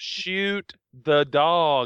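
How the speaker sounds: called out to a group. Voicing the boss giving an order in a fight: yelling. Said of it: "boss yells".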